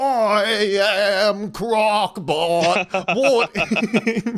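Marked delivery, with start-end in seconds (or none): 0.0-3.2 high, rattling voice with drawn-out "I". Trying a robot villain voice that matches having a tank for feet: tank-rattled Australian Robotnik voice. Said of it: "changed his voice to match having a tank".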